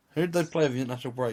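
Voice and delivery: said really quickly, rattled off.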